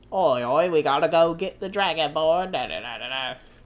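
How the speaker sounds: loud Cockney British dark elf voice. Playing Skyrim, imitating how the game's Dunmer talk: Cockney Dunmer accent. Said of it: "Why are [name] Cockney British in [name]?".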